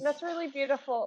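choked up, close to tears. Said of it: "I'm gonna cry".

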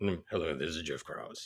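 very low, deep, bass-heavy voice. Retelling a phone call from Jeff Krause: deep bass voice imitating Jeff Krause. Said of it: "the typical Jeff Krause, uh, the way he would speak, that, that, that deep, uh, bass voice that he had".

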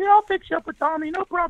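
put-on very high voice of a short high-school kid. Recalling being a short high-school geek, answering the group; imitating own real high voice. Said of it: "I had a real high voice".

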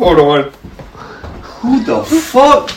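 high streetwise voice. Acting out Tyrone seeing someone outside: acting as Tyrone. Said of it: "He's like".

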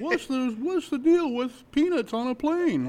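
very high delivery with big pitch swings. Doing a quick comedian bit for co-hosts: Jerry Seinfeld impression. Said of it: "That was my Jerry Seinfeld impression".

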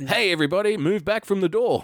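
very high, lively, energetic, enthusiastic announcer voice. Imagining a train door announcement with more enthusiasm, enthusiastic announcement. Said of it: "it wouldn't hurt that guy to have a little bit more enthusiasm".

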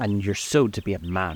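plain reading voice

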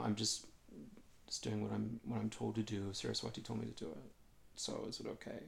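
acted humble manner. Retelling answering a teacher who yelled at them, retelling a meek, humble tone. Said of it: "I'm very humble and meek".

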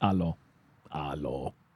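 low quiet robotic voice. Joking with co-hosts about how a greeting is pronounced, robotic voice. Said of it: "And very robotic".

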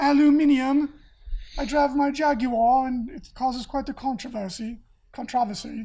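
very poorly done, fake English accent. Imitating how a friend says words: poorly imitated English accent. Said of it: "imitating an English accent very poorly".

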